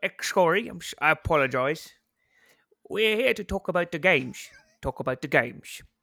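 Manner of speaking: put-on British accent held throughout. Asked on a podcast to do it again, repeat it in a Michael Caine accent. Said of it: "do it again in a Michael Caine accent".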